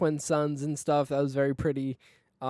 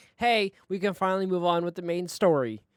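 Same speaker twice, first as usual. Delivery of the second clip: ordinary talk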